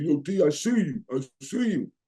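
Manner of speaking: put-on New York accent, slow. Retelling what a guy at practice called out to him, new york accent. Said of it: "with that New York accent".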